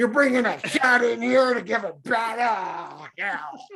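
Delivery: gruff put-on celebrity voice. Playing a veterinarian bath guy taking in a cat: Nick Nolte impression. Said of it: "one of the few celebrities I do a little impression of".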